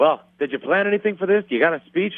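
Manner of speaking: bad, high put-on Irish fighter accent.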